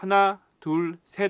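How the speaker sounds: 하나, 둘, 셋 clipped, very loud, each set apart. Demonstrating clear speech without reverberation: clipped, separated 하나 둘 셋. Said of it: "또박또박 하나 둘 셋 이렇게 콕콕 찌르는 듯한".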